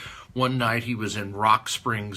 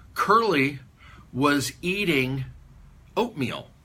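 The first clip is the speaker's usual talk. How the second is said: normal talking voice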